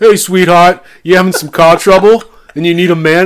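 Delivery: put-on Philadelphia-sounding accent. Quoting a bearded guy who pulls up on a motorcycle, Philadelphia-sounding accent. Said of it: "It almost reminded me of like something from Philadelphia".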